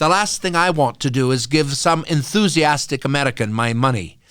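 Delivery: put-on very loud British English woman's accent. Retelling what a British woman said during a fundraising campaign, imitating Sue Fernandez's English accent. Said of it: "pardon my English accent".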